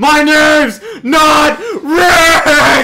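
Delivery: very high, very loud, very slow, drawn-out booming yell. Imagining Patrick from SpongeBob attacking in a game: Patrick yelling. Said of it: "but he yells".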